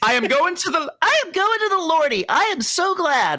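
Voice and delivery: put-on very high, childlike falsetto voice. Attempting the voice the speaker just described, in a high-pitched child falsetto. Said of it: "Like that's the closest I got".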